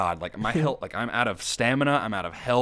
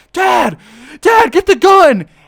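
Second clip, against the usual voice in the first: acted, frantic child's shriek, very high and loud; 17 dB louder than usual. Retelling how a boy spotted the speaker covered in mud, imitating a boy freaking out. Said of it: "he immediately freaks out and he goes".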